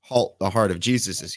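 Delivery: normal talking voice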